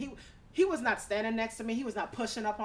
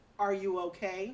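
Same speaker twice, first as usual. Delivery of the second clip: put-on deep seductive man's voice; 2 semitones lower than usual. Retelling what a man asked her, imitating his deep sexy voice. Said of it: "with his deep, fine, sexy voice".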